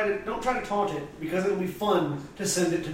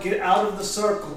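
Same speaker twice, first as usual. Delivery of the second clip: ordinary talk, nothing marked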